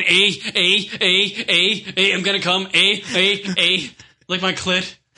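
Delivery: put-on Canadian accent. Joking about an imagined film called Canadian Porn, in a mock Canadian accent. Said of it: "There's gotta be a porn called Canadian Porn".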